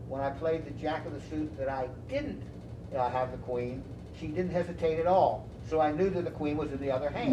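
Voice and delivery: normal talking voice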